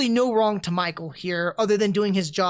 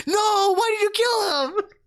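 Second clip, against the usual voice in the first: mock scream, higher; 12 semitones higher than usual. Retelling screaming at the screen in the theater: imitating a scream.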